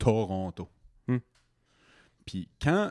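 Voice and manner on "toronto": Toronto with first syllable to stressed. Explaining where the stress falls in a word: stress on first to of toronto. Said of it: "L'accent dans Toronto est dans le premier to".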